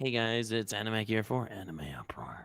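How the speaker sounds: seductive, sultry voice. Hosts trying out show intros, one does the intro: seductive voice. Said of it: "seductive as".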